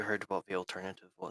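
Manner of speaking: low-key, unobtrusive, discreet aside tone. Playing Sam while Rhea hesitates; speaking quietly under his breath. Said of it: "speaks quietly under his voice".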